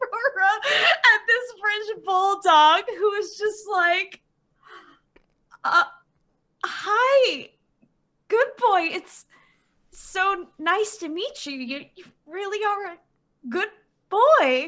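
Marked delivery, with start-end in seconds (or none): 5.6-14.7 awestruck, starstruck, gushing delivery. Playing a starstruck fan meeting an idol dog: starstruck fan voice. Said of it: "Aurora is starstruck".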